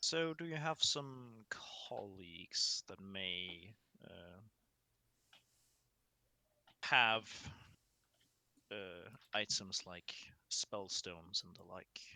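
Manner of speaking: quiet, hushed tone. As Haldir, asking the elderly elf a question, in a low voice. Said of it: "in a in a low voice asks".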